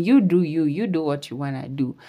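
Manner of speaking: ordinary delivery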